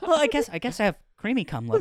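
put-on lilting, sing-song Irish leprechaun accent. Joking with the others about creamy cum: Irish Sykkuno voice. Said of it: "You're doing a leprechaun".

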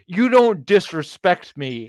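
angry aunt voice, scolding, high and loud. Speaker describes how a man sounded when he got pissed off, mock-angry aunt voice. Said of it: "He sounded like your angry aunt that's like".

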